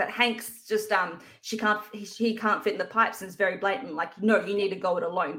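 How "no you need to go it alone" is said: mock short, curt, very terse and blunt. Retelling a character's line in a film scene: imitating a terse reply. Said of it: "very terse with her".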